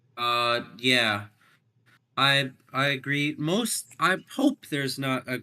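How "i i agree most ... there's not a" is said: voice cracking high mid-sentence. Agreeing with another speaker about a race finish, voice cracking. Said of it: "Oh wow, that was a bad voice crack".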